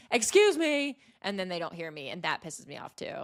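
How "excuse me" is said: put-on high, pitched-up yell. Retelling trying to pass people who don't hear: imitating own yelling.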